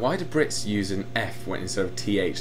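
ordinary delivery

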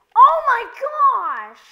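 very loud, very high shrill scream, "gosh" drawn out. Reacting mid-game before apologizing to viewers: screaming. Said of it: "I'm sorry, Squiddy fam, for screaming".

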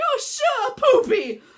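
loud, drawn-out, slow half-shout. Retelling correcting a curse after a fall near neighbors, retelling a shout. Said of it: "So I'm sort of shouting".

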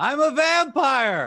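high, loud, overacted scream. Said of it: "and he screams".

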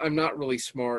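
ordinary delivery

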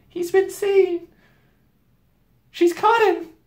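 scared, frightened, very high-pitched alarmed cry. A narrator voices a girl's thought while the others wait in a cave, frightened. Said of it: "frightened them very much indeed".

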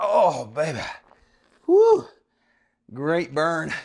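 out of breath. Person leading a workout finishes a set of lateral raises, out of breath. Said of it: "And I'm out of breath".

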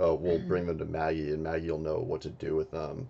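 play-acted dark, foreboding, menacing delivery. Recapping a scene, repeating what a character said, retelling an ominous line. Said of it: "she said it really ominously".

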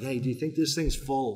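sweet-voiced tone. Retelling a workshop demonstration, quoting the speaker: Stephen Covey's sweet voice. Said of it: "he's sweet voice".

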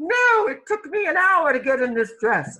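very high, loud put-on British accent. Voicing a woman in a picture, answering about her dress: British accent. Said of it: "speaking with a British accent".

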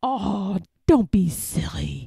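whispering. One burglar answers the other about the dog in the dark house, whispering. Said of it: "whispered the other burglar".

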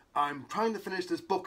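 usual speaking voice

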